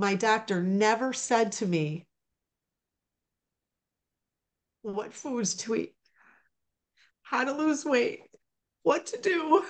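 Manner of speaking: crying through the words, tearful. Speaking about what their doctor never told them, crying while speaking. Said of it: "I'm sorry I'm crying".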